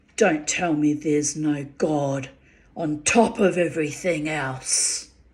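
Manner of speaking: rasping, gravelly, almost demonic voice. Turning to her and matching her energy, in a gravelly, almost demonic voice. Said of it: "in a really gravelly, almost demonic voice myself".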